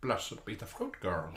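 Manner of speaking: soft put-on character voice. Asked to do Aunt Lydia on the spot: Aunt Lydia voice. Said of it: "Do Aunt Lydia?".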